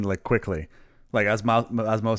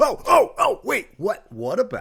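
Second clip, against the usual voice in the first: mock very high, drawn-out, swooping excited blurt; 12 semitones higher, 4 dB louder than usual. Showing how loud speech gets when excited: imitating own excited loud outburst. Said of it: "I get excited".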